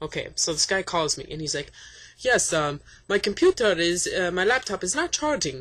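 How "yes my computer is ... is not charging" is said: put-on Arabic accent with hesitations. Retelling a phone call about a laptop, quoting the caller: put-on arabic accent. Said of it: "I'm just doing the accent".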